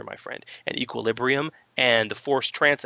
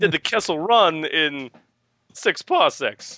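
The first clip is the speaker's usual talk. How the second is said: put-on quirky halting voice, higher and louder; 5 semitones higher, 4 dB louder than usual. Imagining a Jedi on request: Christopher Walken voice. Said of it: "do you imagine a Christopher Walken Jedi?".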